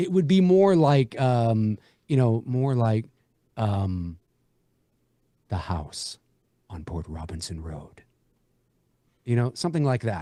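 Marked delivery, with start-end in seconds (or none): 5.5-8.0 very low, dramatic movie-trailer narration voice. Imagining how a trailer voice would announce it: dramatic trailer voice. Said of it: "how I would imagine a trailer voice to be".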